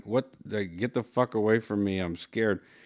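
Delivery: put-on voice of a mad, scared dog. Speaker voices her dog's reaction to being picked up, imitating Lulu, mock-mad and scared. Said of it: "And she sounds mad".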